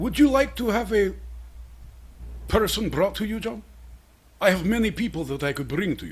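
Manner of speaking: put-on Russian accent. Playing a Russian oligarch answering a question: Russian oligarch character voice. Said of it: "Russian oligarch, my boy Pete".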